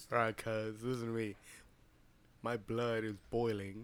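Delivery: posh gentleman's voice, very low and hushed. Character trying out his gangster talk, in a fancy voice. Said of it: "Why'd you sound all fancy?".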